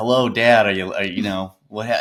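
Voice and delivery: ordinary talk, nothing marked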